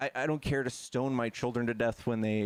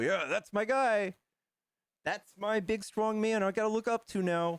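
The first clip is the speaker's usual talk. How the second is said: cartoonish caricature voice, played for ridicule; 9 semitones higher than usual. Mocking a caricatured Republican voter looking for a leader: caricature Republican voter voice. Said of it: "And they go".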